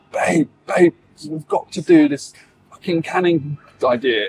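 shouting, called out a touch high. Retelling what was called out in the garden: imitating someone shouting. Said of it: "she just shouted".

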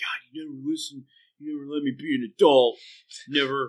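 sulky, mopey, whiny grumble. Retelling a scene between Tim and Brad, imitating Brad getting mopey. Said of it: "Brad gets all mopey".

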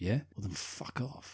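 put-on half-whispered mutter. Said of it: "I really enjoy the way he says that".

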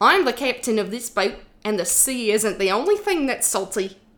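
put-on Australian accent. Reading a line that has to be australian: put-on australian accent. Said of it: "It has to be Australian, though, or from New Zealand".

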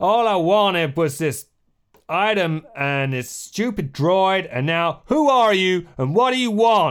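shrill, very high, furious angry yelling. Narrating a scene, voice a man the listeners hear shouting, shouting. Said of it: "You hear him shouting".

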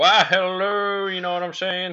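exaggerated, very high, slow southern drawl, big twang. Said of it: "Very southern".

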